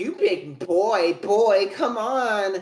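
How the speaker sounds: put-on desperate imp voice, slow and high. Retelling how a desperate elf copies the three imps' voices, mimicking the imps' voices. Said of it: "he copies all three of the imps' voice".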